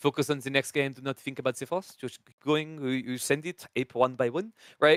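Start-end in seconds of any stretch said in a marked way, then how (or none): 0.0-2.0 put-on French accent. Imagining sitting there coaching him, in a put-on French accent. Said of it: "now I'll put on the French accent".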